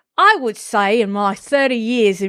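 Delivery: Australian accent slipping in unintentionally. Reading a quote aloud, slipping into an Australian accent. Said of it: "that's Australian".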